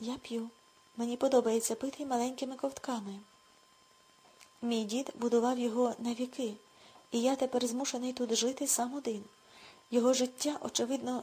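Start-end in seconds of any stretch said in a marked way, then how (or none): none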